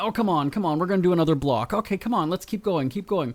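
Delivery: pushing, rushed impatience. Retelling urging a slowing dog on a walk: retelling own yelling at the dog. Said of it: "I almost feel like I'm yelling at him".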